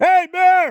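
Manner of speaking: very high, loud, carrying yell. Walking through thick growth, the speaker calls out to bears with a loud yell. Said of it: "I got a pretty loud voice, so when I uh, yell".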